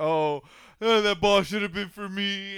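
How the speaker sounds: put-on high, loud, sobbing, blubbering little-kid wail. Retelling a child at a ball game: mock crying kid voice. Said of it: "he starts crying like a little bitch".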